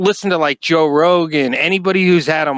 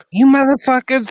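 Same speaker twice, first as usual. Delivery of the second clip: weird, squeezed, pitched-up voice; 8 semitones higher than usual. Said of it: "weird voice".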